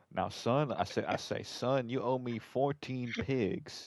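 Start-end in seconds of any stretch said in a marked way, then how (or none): 1.4-3.8 put-on American country mobster voice. Playing a country mobster demanding a debt: american mobster voice. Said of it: "That's the American mobster".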